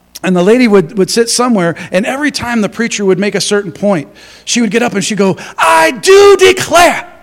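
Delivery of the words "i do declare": very loud, shrill, very high exclamation. Retelling a lady calling out whenever the preacher made a point: called out really loud. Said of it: "like that, really loud".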